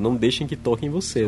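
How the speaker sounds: mock cold, detached, unemotional tone. Recounting a story, quoting what a man said, retelling a cold, detached remark. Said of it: "ele ainda fala assim friamente".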